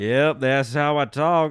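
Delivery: very loud, slow, drawn-out fake country drawl. Mimicking high school classmates who faked it, in a fake country accent. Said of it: "spoke in a country accent".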